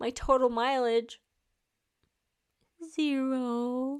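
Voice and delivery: voice catching, near tears, drawn out. Host giving listeners a running update, on the verge of tears. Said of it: "I'm gonna cry".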